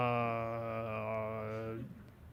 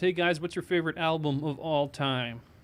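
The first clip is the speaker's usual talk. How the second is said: ordinary delivery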